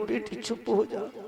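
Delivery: soothing hush.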